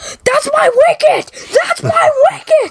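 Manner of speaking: put-on, very high, delighted, happy shriek. Speaker retelling how the listener reacted at the Ewok Village, imitating happy screaming. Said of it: "screaming, because you were so happy".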